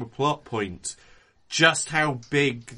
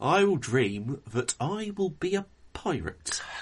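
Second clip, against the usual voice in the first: put-on spoken with an English accent; 2 semitones higher than usual. Saying a line about being a pirate: Johnny Depp as an Englishman impression. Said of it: "amazing Johnny Depp as an Englishman impression".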